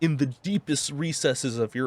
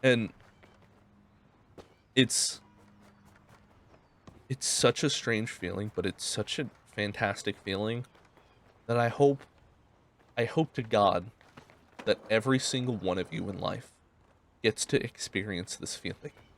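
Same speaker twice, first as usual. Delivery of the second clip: close to tears, lower and quieter; 4 semitones lower, 4 dB quieter than usual. Describing a feeling never felt before, tearing up while talking. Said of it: "I feel like I'm tearing up".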